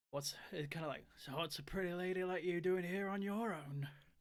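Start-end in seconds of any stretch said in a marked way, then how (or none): 1.2-3.9 put-on heavy northern Yorkshire accent, raised pitch. Voicing a role-play character speaking to another player; thick Yorkshire accent. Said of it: "a fairly thick northern, let's say Yorkshire accent".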